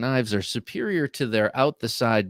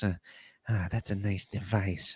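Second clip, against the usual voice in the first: put-on creepy, sinister, unsettling voice; 3 semitones lower, 8 dB quieter than usual. Joking about calling knives devices, said in a creepy voice. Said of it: "unless you say it like this... if you say it in kind of a creepy voice".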